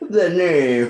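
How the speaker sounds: very high, mimicking, echoing voice. Copying the other speaker's line to tease them: imitating the other speaker's voice. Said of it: "I'm just copying what you said".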